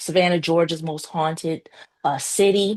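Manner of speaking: ordinary delivery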